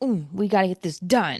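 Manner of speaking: mock cute, a little bossy, take-charge voice. Describing a cartoon leader who is a little bossy: imitating bossy Blossom. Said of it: "a little bossy".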